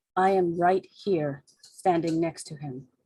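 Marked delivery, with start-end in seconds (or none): 0.2-1.5 slow, unhurried, deliberate, even-paced delivery. A player speaks as Moriko, standing next to him, very quiet. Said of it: "is going to say very quietly".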